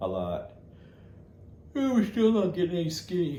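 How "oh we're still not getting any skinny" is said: high-pitched words spoken through a yawn. Tired after a day of walking fifteen kilometers, talking through a yawn. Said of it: "I'm yawning because I am tired".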